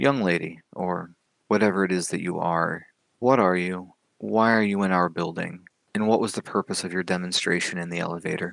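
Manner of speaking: put-on very kindly, gentle grandfatherly old man voice. A gentleman questions the listener after the door locks; very kindly, grandfatherly voice. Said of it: "in a very kindly voice, very grandfatherly".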